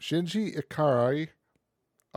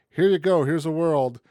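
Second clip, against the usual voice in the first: big, loud mock presenter voice. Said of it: "It's just like".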